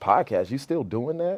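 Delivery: belittling, demeaning, condescending, talking-down tone. Retelling what a man at work said about the podcast, imitating his demeaning tone. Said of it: "he said it like in a demeaning type of tone".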